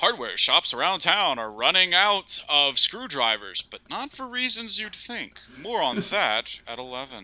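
small-town, extremely local news anchor delivery. Mid-conversation, a speaker slips into an extremely local newscaster voice. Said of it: "extremely local newscaster voice".

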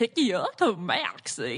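cartoon voice, pitch swooping all over. Showing another impression to friends: Goofy voice. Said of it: "I guess I can also do Goofy".

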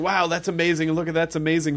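plain

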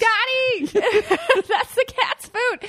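very high, drawn-out, stretched shriek. Reenacting stopping someone eating cat food: imitating own past scream. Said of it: "and then you screamed".

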